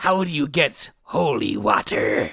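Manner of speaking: put-on pirate voice. Telling a riddle in a pirate voice. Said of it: "You gotta keep up the pirate voice".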